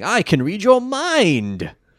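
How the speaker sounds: high, grating, all-out swooping yell, mind drawn out. Recapping an episode, a speaker quotes Espa's opening line, yelling Espa impression. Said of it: "Espa sort of starts the episode by saying".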